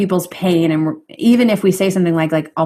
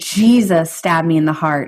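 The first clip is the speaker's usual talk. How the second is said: ordinary talk, nothing marked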